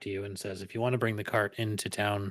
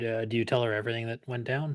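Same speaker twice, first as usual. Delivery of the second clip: ordinary talk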